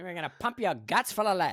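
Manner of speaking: put-on old silent-film gangster voice. Showing a voice he can do on the podcast, an old silent-film criminal voice. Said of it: "like the old silent film, like criminal guy".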